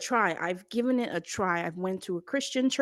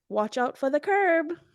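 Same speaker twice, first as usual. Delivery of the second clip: put-on sweet, cutesy, little girly voice; 4 semitones higher than usual. Giving an example of her little comments to her partner, cute little girlfriend voice. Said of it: "in my cute little girlfriend voice".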